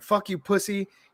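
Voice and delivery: mock furious, high, angry cussing. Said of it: "he's cussing it out".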